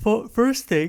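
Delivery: high, loud speech through a yawn.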